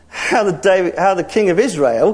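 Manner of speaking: plain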